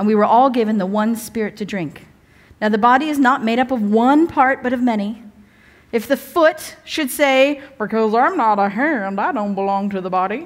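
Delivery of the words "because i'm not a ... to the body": put-on American Southern accent. Reading scripture aloud, speaker voices the foot in a southern accent. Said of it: "I don't know why the foot's Southern".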